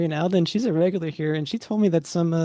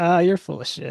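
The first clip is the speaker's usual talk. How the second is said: put-on drunk man voice. Narrating a scene, voicing a man who answers a question: drunk man voice. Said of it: "You can tell he's drunk".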